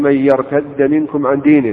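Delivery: ordinary talk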